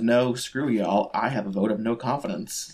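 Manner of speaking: usual speaking voice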